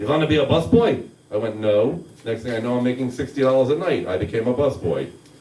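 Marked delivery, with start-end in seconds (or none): 0.0-1.1 put-on heavy German accent. Retelling what the owner said on coming up to them, heavy German accent. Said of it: "with his heavy German accent and goes".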